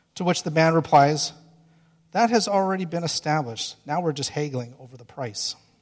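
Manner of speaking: ordinary delivery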